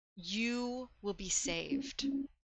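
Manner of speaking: hushed, soft, slow, soothing male voice. Voicing a voice the character remembers from blackness: calming male voice. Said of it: "a very calming male voice being".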